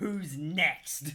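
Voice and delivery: booming, thunderous, furious battle roar. Voicing a character yelling out to the bandits: thunderous furious yell. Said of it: "yell out to the bandits in his, uh, in, in his Norse thunderous fury".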